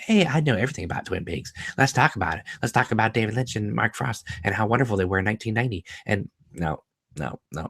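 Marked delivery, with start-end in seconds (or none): 0.0-5.9 put-on bubbly, flashy, over-chipper girl voice, gushing and babbling. Reading a viewer comment, then mocking an over-chipper flashy model girl. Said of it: "flashy model girl like".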